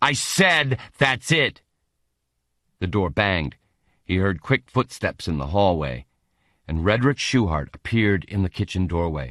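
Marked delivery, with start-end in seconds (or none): 0.0-1.6 harsh, very slow, with a drawn-out final word. Reading a story aloud, voicing a character's harsh reply. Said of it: "replied in a harsh tone".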